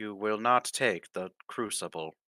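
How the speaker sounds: flat, emotionless, robotic monotone machine voice. The Warforged priest shields Vesna and tells you to leave the crucible: robotic monotone voice. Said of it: "in its robotic monotone voice".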